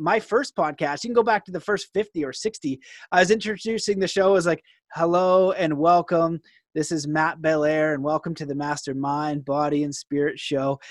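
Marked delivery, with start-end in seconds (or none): 4.9-10.8 put-on sad monotone, much lower pitch. Recalling how he introduced his first podcast episodes, imitating his sad monotone intro. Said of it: "sad and monotone".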